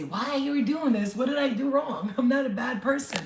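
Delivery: high, loud, hurt, pleading cry. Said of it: "you kinda wanna say".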